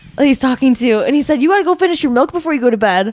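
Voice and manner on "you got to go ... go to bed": higher, louder mocking taunt. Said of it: "you're bullying a kid".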